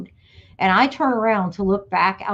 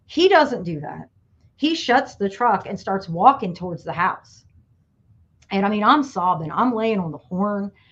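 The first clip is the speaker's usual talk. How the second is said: plain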